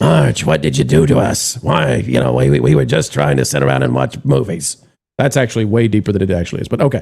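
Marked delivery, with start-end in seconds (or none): 0.0-4.8 raspy, creaky chain-smoker cartoon voice. Describing how angry characters sound in an adaptation, doing a Marge's sisters voice. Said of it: "it sounds like Marge's sisters from The Simpsons".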